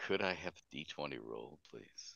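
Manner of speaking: sinister. Asking a player to roll a d20 during a tabletop game: sinister. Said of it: "I love the sinister way you say that".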